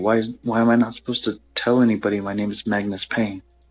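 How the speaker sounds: whispering. Speaking in character to another player, whispering. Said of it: "I'll whisper to you saying".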